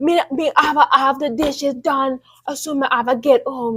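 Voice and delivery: put-on broad, thick Jamaican accent, laid on. Contrasting accents, imitating how jamaican people talk: thick jamaican accent. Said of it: "really thick".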